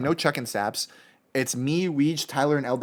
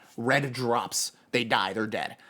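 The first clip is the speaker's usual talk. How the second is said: normal talking voice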